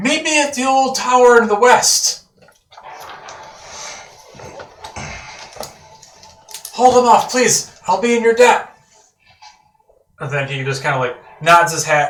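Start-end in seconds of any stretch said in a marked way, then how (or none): 0.0-8.8 called out loud with raised pitch. Voicing a man on a fleeing wagon calling back to the party: yelling. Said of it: "he yells to you guys".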